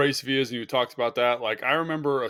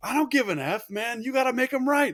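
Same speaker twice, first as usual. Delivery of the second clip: very high-pitched, furious, angry yell; 12 semitones higher than usual. Recalling to the listener a man who yelled at them, retelling a yell. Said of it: "he yelled at you like I've never seen".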